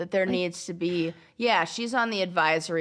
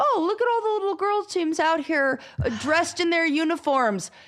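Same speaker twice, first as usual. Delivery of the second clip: mock, very high, pleasantly surprised exclamation; 11 semitones higher, 3 dB louder than usual. Imitating people who see full stands at girls' games: imitating amused surprise. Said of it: "I hate the amusement and the surprise".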